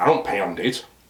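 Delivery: put-on low, dry, expressionless deadpan. Retelling a date's reply to an offer of drinks: imitating a deadpan reply. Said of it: "deadpan respond".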